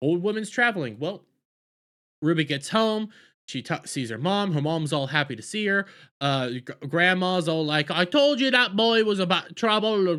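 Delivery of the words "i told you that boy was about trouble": high-pitched put-on Jamaican accent. Retelling what the grandma said when Ruby got home, in a Jamaican accent. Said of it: "Jamaican accents".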